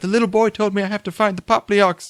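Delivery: sudden, high, put-on British accent. Retelling what she said while wearing a blanket cloak, in a british accent. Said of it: "she has a British accent for no reason".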